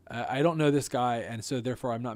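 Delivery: plain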